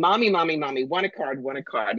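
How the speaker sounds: put-on small child voice. Card reader acting out a client's 2-year-old asking at a show; imitating a 2-year-old. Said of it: "the kid is 2 years old, and she's going".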